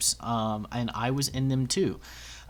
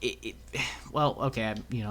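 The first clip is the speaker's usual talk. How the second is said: stuttering, stammering, quieter; 5 dB quieter than usual. Complaining that the community knocks other people down, stuttering. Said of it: "I'm stuttering".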